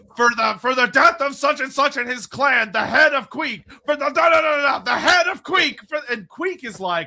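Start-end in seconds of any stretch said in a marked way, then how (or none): 0.2-5.8 play-acted high, raised battle yell. Retelling a book scene, Thorgrim listing his grudges: Thorgrim yelling. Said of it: "Thorgrim is just yelling".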